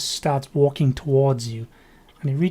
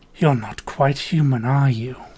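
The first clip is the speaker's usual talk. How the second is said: low, grumbly, growling voice. Speaker voicing a figure with a sword who walks up to someone, low grumbly growl. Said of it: "in a very grum grumbly growl, well, sort of low voice".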